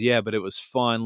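ordinary talk, nothing marked

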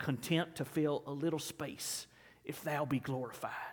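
put-on hushed, low, thick South Carolina accent. Recalling a chapel message, quote the speaker in Dr. Kelly's thick Dillon, South Carolina accent. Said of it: "in his thick Dillon, South Carolina southern accent".

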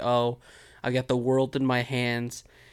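ordinary delivery

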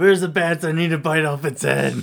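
loud, high, overexcited outburst with no chill. Joking with the others about biting a bat's head: loud voice. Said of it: "Why are you so loud?".

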